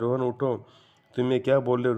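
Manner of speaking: ordinary delivery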